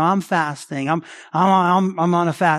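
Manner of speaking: slow, pointed, hinting boastful tone. Preaching on hypocrites who show off fasting: imitating a hypocrite dropping hints. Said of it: "You drop their little hints".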